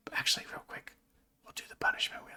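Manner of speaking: whispering. Talking to viewers before noticing they are whispering; whispering. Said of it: "I don't know why I'm whispering".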